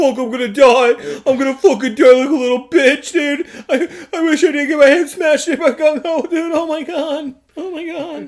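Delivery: mock frantic, panic-stricken rambling, high-pitched. Recapping an episode where Zartan loses his mind, mock-panicked Zartan impression. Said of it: "he was pretty panicked like the entire like time".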